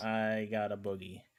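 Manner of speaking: usual speaking voice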